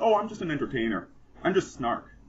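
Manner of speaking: plain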